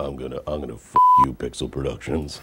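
deepest possible voice. Answering Pixel Productions' request to [name], in a voice as deep as possible. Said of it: "try to make your voice as deep as you can".

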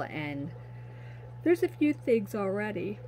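words stretched through a yawn. Speaking to an audience about items in the shop, yawning. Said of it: "I'm yawning on you guys".

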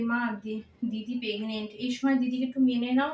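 ordinary delivery, nothing marked

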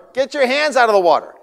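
very high, shrill, very loud yell. Retelling the moment bumps rose from the water, retelling his wife's yell. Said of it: "She's yelling to my daughter".

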